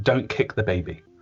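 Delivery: ordinary talk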